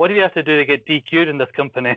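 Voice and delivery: acted indignant outcry, half-voiced, like a yell. Retelling a yell at the referee during a match: imitating someone yelling. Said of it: "just yells at Tubbs".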